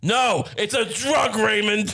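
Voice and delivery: play-acted very slow, dragged-out, high fatherly yell. Retelling being caught pouring a drink: imitating dad yelling. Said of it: "my dad just starts yelling at me".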